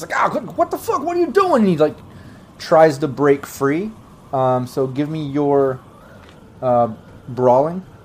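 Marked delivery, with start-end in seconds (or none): 0.2-1.6 high choked-out strangled grunt. Voicing a man being choked out in a game, grunting out while choked. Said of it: "He kind of grunts out".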